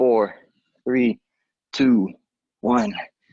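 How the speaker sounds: strained, effortful voice. Counting down reps during a workout, straining from exertion. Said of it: "Starting to hear that struggle in my voice".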